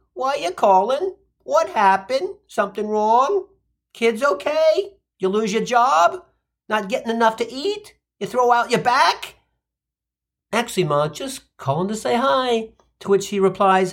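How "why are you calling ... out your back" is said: fretting, worried mother voice. A son retells how his mother answers his calls, imitating worried mother's barrage. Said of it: "she launches into".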